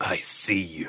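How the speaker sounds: whispered under the breath. Describing a video game hero's ability and quoting his line: retelling a whisper. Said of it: "he like whispers".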